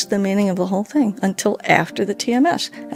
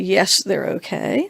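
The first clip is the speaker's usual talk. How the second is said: mock sarcastic tone. Retelling what a woman in a video says: imitating a sarcastic tone. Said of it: "in a very sarcastic tone of voice".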